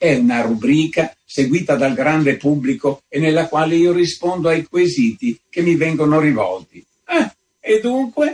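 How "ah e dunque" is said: very high, victorious, triumphant exclaiming cry. A visitor answers the countess, exclaiming in a triumphant tone. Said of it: "esclamò il visitatore in tono di trionfo".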